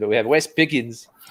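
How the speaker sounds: terrible put-on South African accent. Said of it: "that was more South African, which was terrible".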